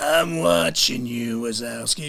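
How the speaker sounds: low, very slow, drawn-out drawl. Retelling a sound check done with a sore throat: Roz from Monsters, Inc. voice. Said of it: "didn't actually have to put the voice on".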